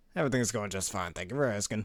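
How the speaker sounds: usual speaking voice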